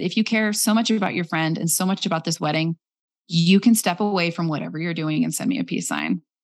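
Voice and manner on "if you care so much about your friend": plain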